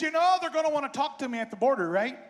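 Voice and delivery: best-effort put-on Canadian accent, plain talk. Retelling a nine-hour trip, the speaker quotes Lulu in Lulu's Canadian accent. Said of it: "I'll do my best Canadian accent".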